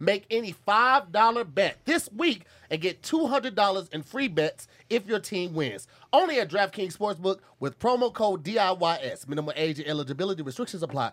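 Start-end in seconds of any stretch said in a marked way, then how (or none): 9.3-11.1 rushed, low, rattled-off delivery. Mimicking a sportsbook commercial, rattling off the closing fine print: rushed commercial disclaimer. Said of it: "You tried to do that last part fast".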